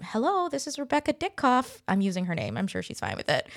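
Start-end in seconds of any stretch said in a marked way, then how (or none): 0.0-1.8 small, little, high-pitched voice. Retelling a phone call being answered: imitating Rebecca Ditkoff's little voice. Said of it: "this little voice picks up".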